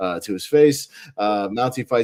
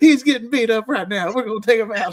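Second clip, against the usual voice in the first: put-on scolding yell, higher; 12 semitones higher, 4 dB louder than usual. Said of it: "[name] just yelling at the bird".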